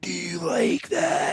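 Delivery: put-on creepy old-man voice, very slow. Describing someone's creepy voice by imitating it, creepy old man voice. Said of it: "you talk like an old man".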